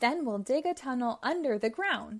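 plain

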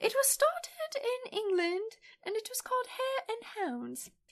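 very high, put-on British lady accent. Though a co-host begged them not to, the speaker switches into the British lady voice. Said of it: "I thought that was a pretty good accent".

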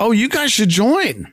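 eager, excited, high-pitched voice. Reading a character's line to the gang in a story, excited. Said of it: "excitedly says".

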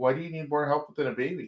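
mock-deadpan, flat delivery. Retelling a scene from a show where a man answers his girlfriend, mimicking a deadpan reply. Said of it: "And like real deadpan".

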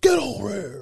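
scary voice, pitched way up. Quoting a movie line to friends in a scary Scorpion voice. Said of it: "with that scary ass voice".

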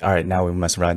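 normal talking voice

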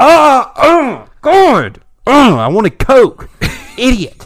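put-on high, loud, furious bratty kid yelling.

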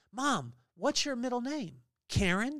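very serious, dead earnest tone, slightly high pitch. Parent retelling his son's question to mom back at the table, retelling a very serious question. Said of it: "very serious".

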